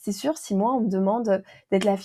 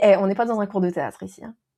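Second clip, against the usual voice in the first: ordinary delivery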